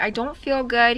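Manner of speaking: ordinary delivery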